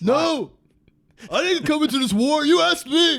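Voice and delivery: very high, very loud action-hero cry. Doing a movie impression after Dirty Harry: John Rambo voice. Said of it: "First Blood. John Rambo".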